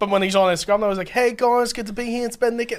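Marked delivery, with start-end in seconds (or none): 1.1-2.8 high-pitched, bright-toned voice. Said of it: "Doesn't sound like him at all".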